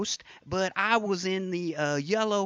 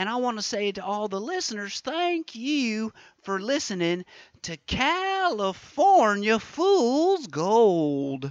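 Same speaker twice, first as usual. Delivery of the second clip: put-on homespun tv host voice; 3 semitones higher than usual. Closing a mock interview with the Governor and thanking listeners: Huell Howser voice. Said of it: "Mister Huelhauser".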